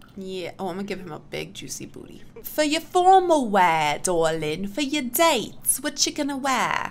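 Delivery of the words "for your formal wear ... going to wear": fake, patchy, bad British accent. Having warned viewers she'll slip in and out of it, she speaks in a bad british accent. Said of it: "go in and out of my bad British accent".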